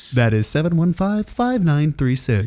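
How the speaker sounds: radio commercial announcer voice. Host giving the call-in number on his show, in his radio commercial voice. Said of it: "That's my commercial voice".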